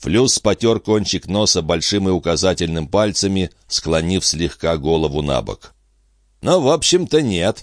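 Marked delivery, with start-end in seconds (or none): 6.4-7.6 pleased, satisfied, pitched-up voice. Flus confirms Pin's remark that he has no choice, with some pleasure. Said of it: "не без удовольствия подтвердил Флюс".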